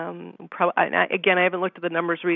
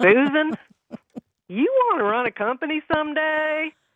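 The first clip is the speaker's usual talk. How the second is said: put-on very high-pitched Texas accent; 10 semitones higher than usual. Retelling what a man said when she asked to apply for a job, Texas accent. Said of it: "he had this Texas accent".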